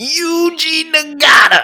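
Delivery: very high top-of-the-lungs scream, one word stretched. Retelling how a friend used to yell a wrestler's name: imitating a friend screaming. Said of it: "screaming at the top of his lungs".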